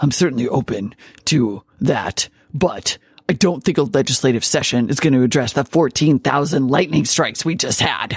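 brooding, gruff, growled masked-vigilante superhero voice. Retelling the governor's answer to a reporter's question, in Batman voice. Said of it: "he did it in Batman voice".

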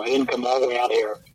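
ordinary talk, nothing marked

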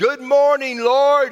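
loud, high, top-of-the-lungs shout. Retelling how a visiting evangelist woke the house: imitating a loud shout. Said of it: "he would just shout at the top of his lungs".

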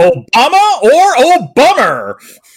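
high, ear-splitting, booming talk-radio blowhard voice. Asked to say a series name like Rush Limbaugh would, Rush Limbaugh impression. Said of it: "you also blew out my ears".

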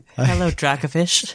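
sad, mournful creature voice. Voicing a sad resurrected fossil Pokémon missing its home: sad voice of a resurrected fossil Pokémon. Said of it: "I can see him saying that in that voice".

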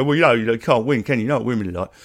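dismissive, brushing-off man's tone. Retelling how men tend to talk about women: imitating men dismissing women. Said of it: "horrible tendency of men to go".

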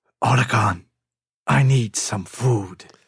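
very deep, slow, drawn-out, deliberate voice. Asked for a best Solid Snake impression: Solid Snake impression. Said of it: "me dá a sua melhor imitação de Solid Snake".

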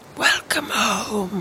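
theatrical, hushed, dramatic stage half-whisper. Retelling what the woman with the shovel said in the vision, in a dramatic half-whisper. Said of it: "just like that".

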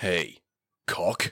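dropped, deep voice. Acting out a chat, the speaker voices the other person: much lower voice. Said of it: "I'll use a much lower one for him".

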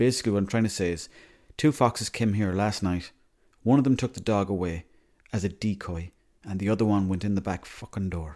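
ordinary talk

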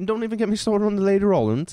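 put-on Cockney accent. Gossiping with a friend about two people who didn't get along: put-on Cockney accent. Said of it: "gotta work on your accent".

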